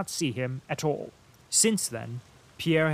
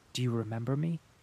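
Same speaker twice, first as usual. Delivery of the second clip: quiet, lower and softer; 2 semitones lower, 4 dB quieter than usual. Boris asks a man who has forgotten him since boyhood: quiet question. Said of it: "asked Boris quietly".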